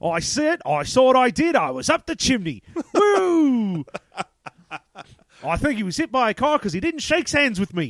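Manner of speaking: shoddy fake British accent with drawn-out woo. Acting out scenes from a bad film about a chimney sweep: bad fake British accent. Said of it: "the shitty British accent like we are doing".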